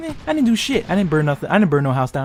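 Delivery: ordinary talk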